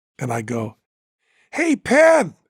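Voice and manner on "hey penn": very high, put-on disguised voice. Retelling creeping up behind a man and calling out to him, in a disguised, slightly higher voice. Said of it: "try to make my voice a little bit higher".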